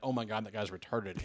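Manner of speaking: plain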